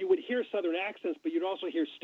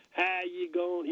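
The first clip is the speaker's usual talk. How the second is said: put-on heavy Southern accent, much slower. Recalling a Foreign Service colleague, imitating a heavy Southern accent. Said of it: "he had like a very heavy Southern accent".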